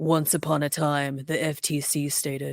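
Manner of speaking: spooky put-on storyteller voice, low and dark. Reading an FTC statement like a story in a dark, scary voice. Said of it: "let me do it in my my darker, scarier voice".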